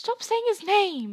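frightened whisper, whispering in terror. Reading a story aloud, one character replies to another: terrified whisper. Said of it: "said Ron in a terrified whisper".

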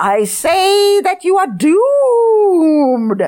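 put-on very high, quavering, drawn-out old-woman voice shout. Narrator voicing a 1,003-year-old woman addressing two others, a shaky shout. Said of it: "she shouted in a shaky voice".

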